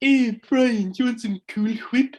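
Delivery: put-on very high-pitched cartoon baby voice. Reusing the other person's line, the speaker tries a Stewie Griffin impression. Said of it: "you're gonna try and impersonate Stewie Griffin".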